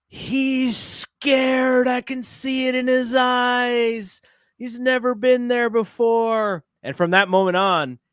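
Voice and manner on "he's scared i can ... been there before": mock very slow, high scream at the top of the lungs. Retelling a father's reaction during Super Bowl introductions: imitating dad screaming. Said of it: "my dad screams at the top of his lungs".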